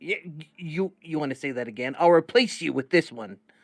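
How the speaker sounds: yelling loudly. Talking back to Dixon, a droid beeping at him, yelling at a droid. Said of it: "I'm yelling back at him".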